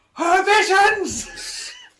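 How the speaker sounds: zealous, fervent, very high, swooping outcry. Mocking another player's devout character: imitating a zealous believer. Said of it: "And you're going".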